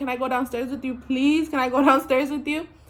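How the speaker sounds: put-on crying, tearful begging voice. Retelling begging a woman to let her go downstairs, reenacting crying pleas. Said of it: "But I'm crying".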